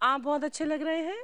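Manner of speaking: rising, question-like lift on final हैं. Imitating someone whose statements ended like questions: rising at the end like a question. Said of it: "उनका हर statement का जो ending होता था वो सवाल की तरह होता था ... सवाल हो गया है?".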